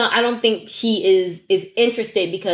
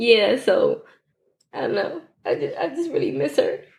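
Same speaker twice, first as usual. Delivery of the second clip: tearful, pitched-up voice on the verge of tears; 5 semitones higher than usual. Speaker near tears while friends tell her not to cry: tearful. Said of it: "Don't make me cry".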